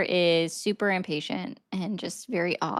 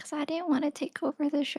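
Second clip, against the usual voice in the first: put-on soft, high, creepy small British child voice; 7 semitones higher, 7 dB quieter than usual. Answering a co-host who asks why they are talking like that: creepy british child voice. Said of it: "you're talking like you're a small British child in a scary movie".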